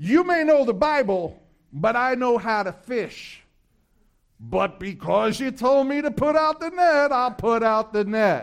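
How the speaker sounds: acted, put-on sarcastic tone. Acting out Peter's reply in a Bible passage, mock-sarcastic. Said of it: "There's a tone of sarcasm in there".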